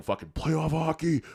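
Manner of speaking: high yell, slow and drawn out. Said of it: "he would just be yelling".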